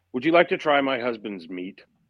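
ordinary delivery

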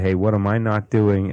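ordinary talk, nothing marked

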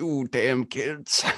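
fake elderly man voice. Voicing a made-up old man who yells at kids: Old Man Jenkins voice. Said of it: "It's Old Man Jenkins".

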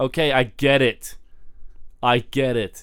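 ordinary delivery

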